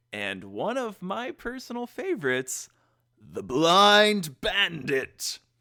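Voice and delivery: loud show-host announcer voice, stretching Blind. Podcast host introducing the episodes covered on the show: announcer voice. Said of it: "kind of like uh, an announcer voice".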